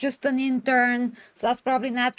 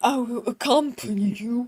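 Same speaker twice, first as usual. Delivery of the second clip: mock masculine, tempered voice. Describing how a woman walks and talks, mimicking her: manly, tempered voice. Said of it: "talking with this manly, tempered voice".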